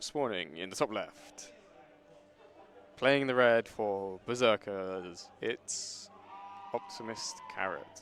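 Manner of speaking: downcast, lifeless, slow, flat, dejected delivery. Announcing which player spawns for the Berserkers in a game match, sounding depressed. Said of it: "You sound so depressed having to say that".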